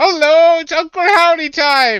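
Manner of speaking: shrill, high, loud, slow, drawn-out booming shriek. Saying a greeting as Uncle Howdy: Uncle Howdy voice. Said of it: "That's exactly how he sounds, too".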